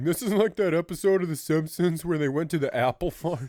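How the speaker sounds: high, loud, excited yelling, repeated over and over. Retelling what the other speaker said on the tour: imitating someone yelling. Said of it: "kept yelling".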